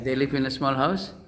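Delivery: house said with a rising tune at the end.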